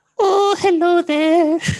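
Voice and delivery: put-on shrill, booming, very high Elizabethan-style old witch screech. Asked to switch to an Elizabethan accent, answering in an Elizabethan witch voice. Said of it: "I didn't mean Elizabethan witch".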